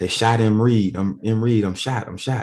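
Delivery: yelled with urgency. Retelling shouting after being shot so people would hear: retelling a yell. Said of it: "So I'm yelling it out".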